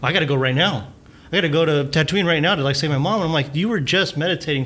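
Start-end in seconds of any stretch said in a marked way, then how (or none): 0.0-3.2 put-on sudden snap, higher. Retelling a calm character who suddenly turns to her, mock-snapping suddenly. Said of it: "like snaps and just like".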